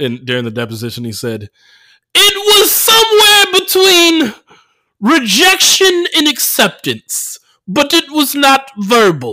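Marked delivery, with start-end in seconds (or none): 2.1-9.3 very high, very slow, swooping sing-song, stretched out. Quoting a deposition line read online: Bill Cosby voice. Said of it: "I couldn't help but read it in his voice".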